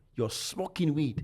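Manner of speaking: put-on Ghanaian-accented speech. Act out the woman who came to your room and caught you smoking, imitating a Ghanaian accent. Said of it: "in her Ghanaian accent".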